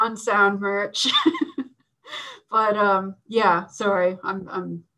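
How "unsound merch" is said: slow, facetious, tongue-in-cheek delivery. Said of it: "I'm being, uh, facetious now".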